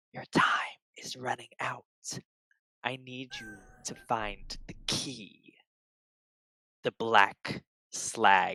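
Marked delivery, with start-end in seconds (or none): 0.2-5.6 hushed, very quiet, close-up whisper. Voicing a creature that whispers a warning in a player's ear: whispering. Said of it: "whispers in your ear".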